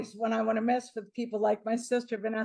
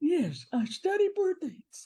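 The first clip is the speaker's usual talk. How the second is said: heavily warped, distorted, pitched-up disguised voice; 6 semitones higher than usual. A disguised guest answers a guesser's question, in a heavily distorted disguised voice. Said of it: "the greatest voice distortion I've ever heard".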